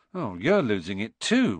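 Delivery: plain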